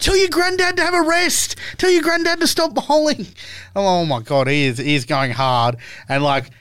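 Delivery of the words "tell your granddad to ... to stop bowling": shrill, very high, carrying yell. Retelling what an old bowler yelled to the fielder on the boundary, retelling a yell. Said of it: "he's yelling to the guy on the boundary".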